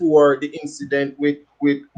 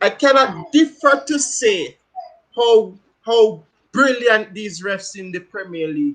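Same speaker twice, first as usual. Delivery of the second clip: pitched-up, tongue-in-cheek sarcastic tone; 5 semitones higher than usual. Asked to back up the praise of the referees, a speaker answers: sarcastic. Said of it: "enough of the sarcasm".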